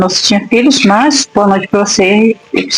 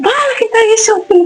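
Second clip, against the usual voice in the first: put-on shouting, pitched higher; 14 semitones higher than usual. Retelling how the husband shouted at an intruder: imitating someone shouting. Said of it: "Saiu gritando".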